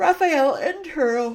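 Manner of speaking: words stretched out by a yawn. Reading a chart title aloud while explaining data visuals, yawning. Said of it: "Sorry, I'm yawning".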